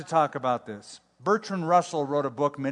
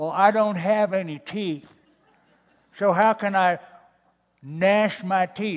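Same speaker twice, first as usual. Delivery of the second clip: mock snarky, challenging, sarcastic old lady voice; 4 semitones higher than usual. Telling a story about an evangelist, an old lady answers him: imitating a sarcastic old lady. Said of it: "one old lady decided she was sarcastic".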